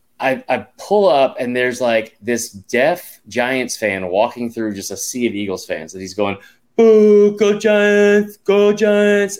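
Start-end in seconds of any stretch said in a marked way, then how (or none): 6.8-9.4 very high, very slow, drawn-out, loud jeering voice. Retelling a Giants fan heckling a sea of Eagles fans, in a deaf Giants fan impression. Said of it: "that was a very good impression".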